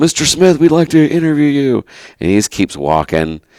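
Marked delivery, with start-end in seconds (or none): 0.0-1.8 put-on, very high, carrying called-out yell. Retelling how a companion called out to a passing official: retelling a yell. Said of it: "yells out".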